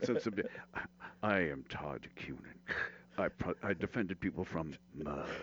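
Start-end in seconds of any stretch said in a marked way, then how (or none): 1.2-5.2 dramatic put-on voice with a sharp breath. Showing the Orson Welles breath snatch on a lawyer ad line. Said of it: "the Orson Welles breath snatch".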